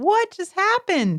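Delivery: put-on high, slow, bewildered little kid voice. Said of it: "They just like".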